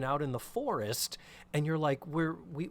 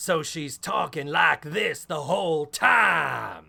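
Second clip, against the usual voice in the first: put-on guttural Southern accent, very loud; 8 dB louder than usual. Speaker imitating how the actress plays the twin sister, guttural Southern voice. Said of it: "play it in the guttural part of her voice".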